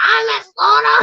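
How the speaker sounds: put-on small, hoarse, raspy little child voice. Retelling how a boy greets the speaker every time he sees her: imitating a little raspy voice. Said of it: "he's got like this little raspy voice".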